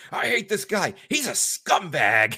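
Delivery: put-on high, stretched, drawn-out screaming rant. Retelling a wrestling call where a co-commentator screamed: imitating Decker screaming. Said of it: "Decker's just screaming".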